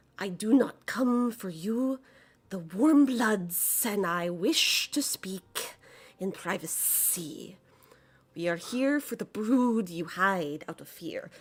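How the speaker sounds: slow, restrained, barely contained fury. Voicing a character who explains while getting angry again: angry, barely controlled voice. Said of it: "gets angry again as she's trying to explain".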